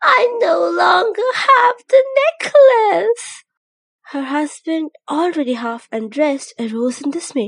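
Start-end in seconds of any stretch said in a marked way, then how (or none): 0.0-3.4 very high, very loud, shrill tearful crying outburst. Reading a story, voice the wife at the mirror crying out. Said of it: "She was a pretty charming young lady, born as if through an error of fate into a family of office workers. The sight of her husband, a petty clerk in the Board of Education, awakened in her sad regret".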